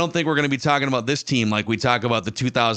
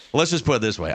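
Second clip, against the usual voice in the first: put-on condescending tone. Quoting a co-host's words from before wrapping the episode: imitating a condescending tone. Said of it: "in a very condescending tone".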